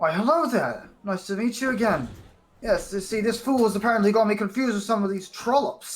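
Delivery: spoken through a smile. A game narrator voices a character greeting the party again: smiling as he speaks. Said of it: "gives you a smile and says".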